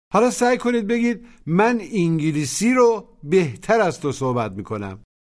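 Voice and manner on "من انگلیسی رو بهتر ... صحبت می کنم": normal talking voice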